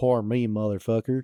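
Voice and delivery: ordinary talk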